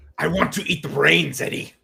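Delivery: rough, creaky, dumb-sounding gruff voice. Answering a joke about picking brains, in a dumb gruff Venom voice. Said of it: "a dumb gruff voice".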